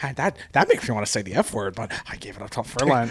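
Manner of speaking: dead-serious, grave, scandalized pundit tone. Retelling what Tucker Carlson always says about Lent: Tucker Carlson impression. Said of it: "and he's always like".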